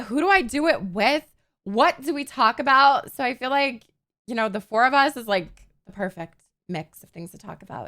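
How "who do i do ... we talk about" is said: ordinary talk, nothing marked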